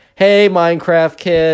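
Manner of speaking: mock loud call. Retelling a classmate calling out across a room: imitating a loud call. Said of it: "very loudly".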